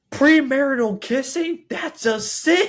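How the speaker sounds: very high-pitched, shrill, very loud holler. Recounting seeing a couple kissing and wanting to yell from a window; retelling a yell. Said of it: "I wanted to open this window and just yell".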